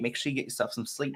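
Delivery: bad, terrible put-on British accent. Telling a moderator in the UK to get some sleep: terrible put-on British accent. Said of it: "That's my terrible accent".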